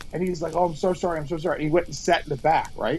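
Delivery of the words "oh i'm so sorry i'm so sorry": put-on terrified, frightened tone. Retelling how Kelly screamed at a guy, the speaker quotes his reply: imitating a terrified apology. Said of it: "The guy was terrified".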